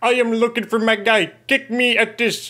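put-on Indian accent. Imitating stereotypical scammers reading a profile line: put-on indian accent. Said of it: "I can't do the accent".

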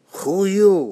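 put-on heavy Russian Yiddish accent. Recalling how a family member greeted him: heavy Russian Yiddish accent. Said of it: "he'd say with his heavy Russian Yiddish accent".

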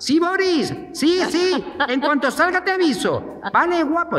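imitated shouting. Retelling calling out to Boris from the shower: imitating his own shouting. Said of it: "yo gritaba".

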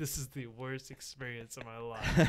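ordinary talk

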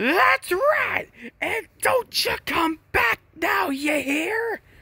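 put-on very high, elderly woman's voice. A game character's voice line being reviewed, in an old lady voice. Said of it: "She sounds like an old lady".

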